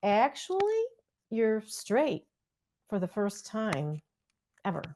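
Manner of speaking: very calm, soft delivery. Retelling how he answered their complaint, imitating his calm voice: retelling a calm reply. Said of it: "he very calmly he says".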